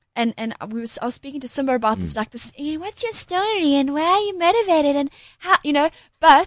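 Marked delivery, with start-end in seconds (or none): 2.5-5.5 put-on unsure voice, much higher pitch. Speaker acts out how they ask people for their story, put-on unsure voice. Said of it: "What voice was that?".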